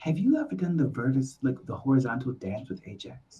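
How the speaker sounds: hushed, secretive half-whisper. Leaning over to ask another character a secret question in character: half-whispering. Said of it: "That's why I'm whispering".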